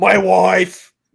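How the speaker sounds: very loud, high, booming put-on speechmaking voice. Repeating a line in a mock voice: JFK voice. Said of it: "why do I sound like J F K".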